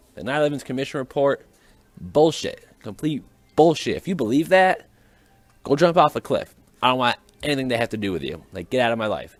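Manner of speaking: mildly angry, dismissive rant. Ranting about the nine eleven commission report, a little angry. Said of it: "I'm sounding a little angry right now".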